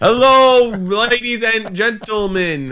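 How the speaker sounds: very slow and loud, gentlemen said as gentlemin. Imitating another person's show greeting, imitating his odd "gentlemin" greeting. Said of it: "Have you noticed he, like, puts an I in gentleman?".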